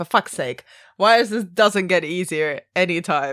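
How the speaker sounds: plain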